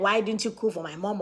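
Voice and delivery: normal talking voice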